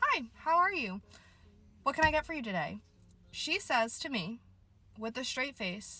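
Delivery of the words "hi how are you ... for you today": mock polite, friendly, pleasant customer-service counter voice. Retelling greeting a customer at the start of a shift: imitating own pleasant greeting. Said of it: "me being the pleasant worker that I am".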